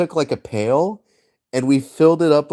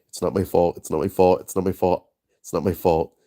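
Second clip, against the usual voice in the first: put-on muttering under breath, lower; 7 semitones lower, 4 dB quieter than usual. Retelling walking out past a brother at a fire: imitating muttering under breath. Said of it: "muttering under my breath".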